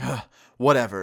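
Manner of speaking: mock angry sigh, huffing. Retelling a furry dude's reply in a crowded doorway: imitating an angry sigh. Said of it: "really angry sigh".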